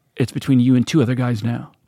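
ordinary talk

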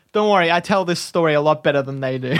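usual speaking voice

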